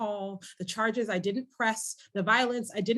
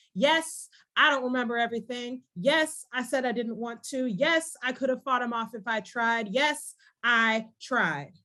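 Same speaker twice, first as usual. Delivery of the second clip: slam-poetry delivery with voice raised; 2 semitones higher, 4 dB louder than usual. Performing a poem, speaking the next part in a raised voice like a slam poet. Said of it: "raises their voice during this next part".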